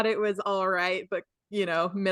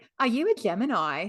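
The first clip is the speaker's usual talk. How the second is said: put-on light, cute, slight Australian accent; 3 dB quieter than usual. Retelling a woman on a show asking her friend, in a little Australian accent. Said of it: "In her little Australian accent".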